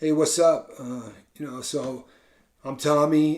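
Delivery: slow, listless, slumped, low-energy mumble. Imitating guys in videos who talk slumped over: imitating a slumped, low-energy talker. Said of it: "if you sit and talk like this".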